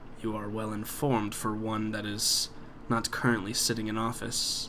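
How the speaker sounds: chilly, distant, cold, quiet voice. A game master voices the Count replying to a player, cold. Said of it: "So the Count, / he looks down again and he says, / Yeah, he's coming off very cold, / So the Count".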